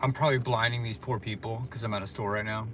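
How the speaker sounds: ordinary talk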